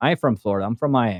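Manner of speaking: mock deadpan delivery. Mimicking how Floridians say where they're from, the speaker gives a mock-deadpan answer. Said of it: "Straight face, deadpan as fuck".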